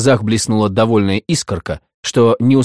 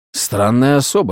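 usual speaking voice

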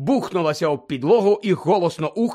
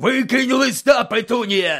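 high, roaring, bellowing yell; 6 semitones higher than usual. Reading Uncle Vernon calling to Aunt Petunia as she takes the letter, bellowing. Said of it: "заволав дядько Вернон".

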